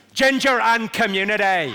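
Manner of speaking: loud Belfast accent, every syllable of "community" sounded. Showing the phrase used to get the Belfast accent right. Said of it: "the phrase I use to get the Belfast accent right".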